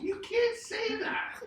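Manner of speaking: voice shooting very high, strained. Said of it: "my voice goes so high".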